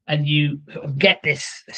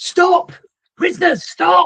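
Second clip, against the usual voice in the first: very high, urgent yelling; 4 dB louder than usual. Voicing pursuers charging down the corridor at the prisoners: pursuers shouting. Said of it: "they shout".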